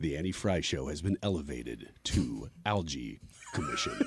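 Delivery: deep, hushed movie-trailer announcer voice. A host, prompted by a co-host, announces the show in a movie trailer voice. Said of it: "his In a World voice".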